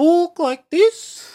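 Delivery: very high-pitched New Zealand accent. Explaining the easiest way to do a New Zealand accent, demonstrating a higher-pitched New Zealand accent. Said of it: "easiest way to try and do a New Zealand accent".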